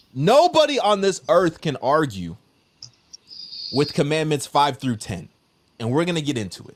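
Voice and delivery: fired up, excited, swooping hyped-up delivery. Arguing that no one can dispute commandments five through ten: hyped up. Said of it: "I'm kinda hyped up".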